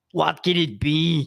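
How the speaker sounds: loud, very slow, deliberate, word-by-word delivery. Reading a comic strip aloud as the Sarge: Arnold voice. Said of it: "I'm gonna try Arnold".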